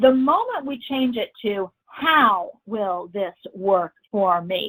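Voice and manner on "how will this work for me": "how" stressed, said very slowly. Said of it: "Notice I emphasize the word how".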